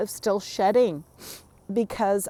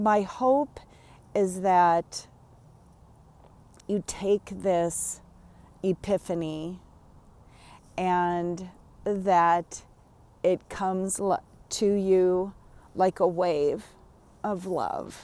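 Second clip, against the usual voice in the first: choked-up, halting, voice breaking mid-phrase; 3 semitones lower than usual. Sharing a hope about an epiphany with the listener, getting choked up. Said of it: "I don't know why I'm getting all choked up now".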